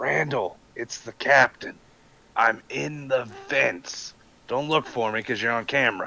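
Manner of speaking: hushed whisper. As the captain hiding in the vents, calling to Randall; whispering. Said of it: "So I'm gonna whisper to Randall".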